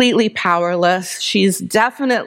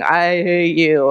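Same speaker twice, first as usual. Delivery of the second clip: growled, demonic voice; 3 semitones lower than usual. Retelling a woman with a demon manifesting speaking to him, imitating a demonic growl.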